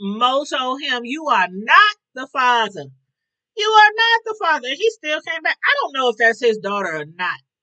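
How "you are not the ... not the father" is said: loud, big showman announcer voice, pitch swinging wide. Recapping a storyline, the speaker quotes Mo telling him in Maury voice. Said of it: "in my best Maury voice".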